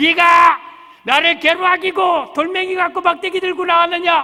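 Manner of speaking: high, loud, sneering giant voice.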